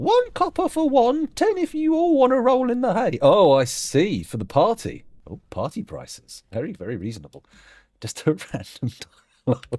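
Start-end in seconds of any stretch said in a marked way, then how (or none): 0.0-3.2 very high-pitched, funny comic character voice. Storyteller voicing a woman character the players meet, in a funny character voice. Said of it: "She has a funny voice and says".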